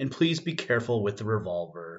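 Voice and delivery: ordinary delivery, nothing marked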